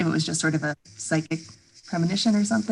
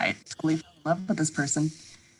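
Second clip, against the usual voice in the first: normal talking voice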